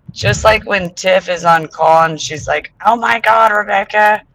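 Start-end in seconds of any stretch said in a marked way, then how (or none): 2.9-4.2 mock shrill, ear-piercing exclamation. Retelling how Tiff calls out on a call: imitating Tiff's ear-piercing loud voice. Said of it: "Ear piercing".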